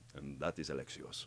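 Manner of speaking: raspy, put-on Greek accent. Explaining how he found a character's voice, demonstrating Alexios voice, Greek accent. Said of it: "I put on a Greek accent. And so then he became like this".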